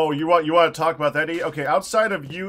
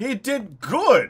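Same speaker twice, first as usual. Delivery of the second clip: genuinely astonished, surprised, pitched-up tone; 6 semitones higher than usual. Praising a teammate who didn't die in the game, surprised. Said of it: "you sound surprised".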